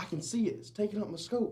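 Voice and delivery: mock, very high, angry yelling. Retelling Chris arguing about a distance through his scope, imitating Chris yelling. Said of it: "And he's just yelling".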